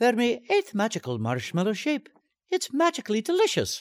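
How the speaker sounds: very high-pitched, sing-song, swooping, bouncy cartoon sprite voice. Asked about the old Lucky Charms Leprechaun gig, high-pitched Lucky Charms Leprechaun voice. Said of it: "See if I can find that high-pitched thing".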